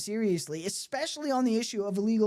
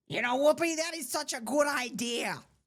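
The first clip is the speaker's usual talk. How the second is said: put-on, scornful New York accent; 4 semitones higher than usual. Mocking a TV co-host's line just played: Joy Behar impression. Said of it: "Joy Behar is the reason I hate the Northeast".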